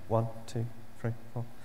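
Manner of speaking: bashful, timid, small shy voice. Describing people who count to ten in a test, imitating shy counting. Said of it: "they do it really shy".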